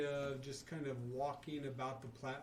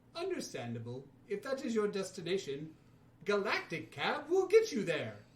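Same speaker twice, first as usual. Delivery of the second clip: very loud, high, swooping robot voice; 6 semitones higher, 9 dB louder than usual. The droid cab driver accepts a rider's destination: rusty droid cab driver voice. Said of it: "[name] kind of looks and just jumps in as you see a droid with kind of rusted a little bit, kind of C-3PO-like eye-noculars, and a metal kind of cabbie hat that appears to be dented on the side from /".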